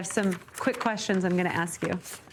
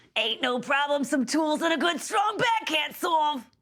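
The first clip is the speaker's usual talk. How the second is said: higher-pitched put-on character voice; 8 semitones higher than usual. After asking permission to do a character voice: Meepo voice. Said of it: "Do you mind if I do a Meepo voice?".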